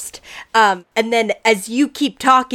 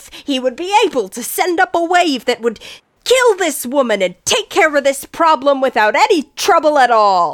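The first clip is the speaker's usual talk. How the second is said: raised, louder voice with higher pitch; 4 semitones higher than usual. Voicing Hargoth in an argument with a woman: raised voice. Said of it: "you hear Hargoth raise his voice".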